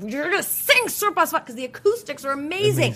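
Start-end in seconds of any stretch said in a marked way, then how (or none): 0.0-1.4 mock, bossy, yelling voice. A mother retells yelling at her kids inside a mountain church, re-enacting the yell. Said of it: "I'm yelling at my kids".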